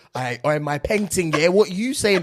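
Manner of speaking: put-on British accent. Retelling a TikTok of an American showing off: imitating an American's fake British accent. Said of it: "I'ma show you what the Brit-, British accent is like".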